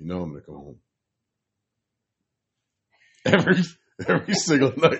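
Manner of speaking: getting emotional mid-sentence. A speaker in a two-person conversation gets choked up mid-sentence. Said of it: "I'm really getting choked up".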